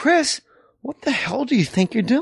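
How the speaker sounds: fake irritated voice. Retelling how the head writer scolded Chris: Jim Downey's mock annoyance. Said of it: "the fake, like, "I'm really annoyed at you right now."".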